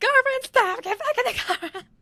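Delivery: very high, loud, shrieking scream. Acting out screaming at the other speaker to get back: imitating a scream. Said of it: "Me screaming at you".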